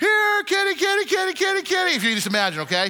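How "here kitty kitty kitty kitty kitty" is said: mock very high call at the top of the lungs. Retelling calling the cats from the backyard; retelling a full-lung yell. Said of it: "I yell at the top of my lungs".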